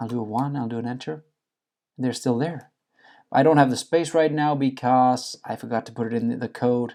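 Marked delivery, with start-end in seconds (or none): 0.0-2.7 really quiet, hushed voice. Running the code to see if the customer is still there, talking really quiet. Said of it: "I'm talking really quiet".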